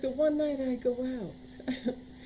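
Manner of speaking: put-on heavy, thick, high Italian accent, laid on thick. Retelling what a woman said on a night out, in a thick Italian accent. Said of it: "She had a thick Italian accent".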